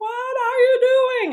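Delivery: very high, angry, cross mom voice. Reading a story aloud, voicing the mother in a cross mom voice. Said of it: "cross is another word for angry".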